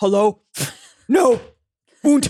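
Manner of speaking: low, deep, flat put-on voice. Teasing a friend about how he sounds on calls: imitating Eli's low phone voice. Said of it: "Eli gets really low on the phone".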